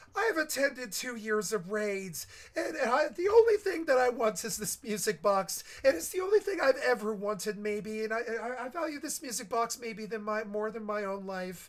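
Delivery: shrill, very high elfin pixie voice. Retelling what a woman said in the vent about a music box: shrill pixie elfin voice. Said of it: "wonderful pixie elfin voice go shrill like a piccolo".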